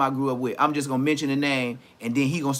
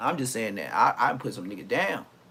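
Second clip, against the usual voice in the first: plain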